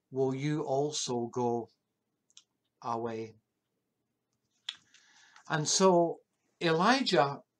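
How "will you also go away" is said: mournful, wistful, melancholy and sorrowful tone. Speaker retelling what he said to his disciples as the crowds left, melancholy voice. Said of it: "in a melancholy voice".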